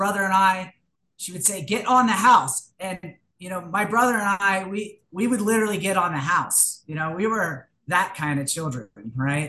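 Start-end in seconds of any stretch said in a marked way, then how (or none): 1.6-2.7 put-on cross, angry barking yell. Quoting the speaker's mother scolding the speaker and brother: imitating mom yelling angrily. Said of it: "when she get mad".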